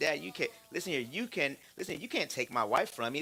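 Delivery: ordinary talk, nothing marked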